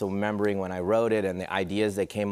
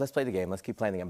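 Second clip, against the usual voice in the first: put-on eager, competitive insistence; 3 dB quieter than usual. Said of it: "Very competitive".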